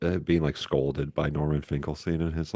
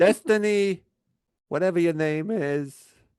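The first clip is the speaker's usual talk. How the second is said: put-on scolding voice, higher and louder; 5 dB louder than usual. Trying an impression after being asked to do it: Norman Finkelstein impression. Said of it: "Do it".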